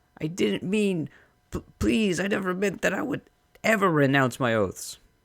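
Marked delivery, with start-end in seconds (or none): 0.2-3.2 high, terrified, frightened, stumbling stammer. A servant questioned about his loyalty to Adnua pleads; high, terrified voice. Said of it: "His voice goes high with terror".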